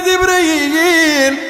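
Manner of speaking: high, drawn-out anguished cry.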